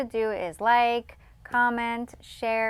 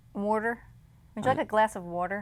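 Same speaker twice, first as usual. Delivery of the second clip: Philadelphia-style accent and pronunciation; 4 dB quieter than usual. Showing a partner how to say water, in a Philadelphia accent. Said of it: "now you say it the Philadelphia way".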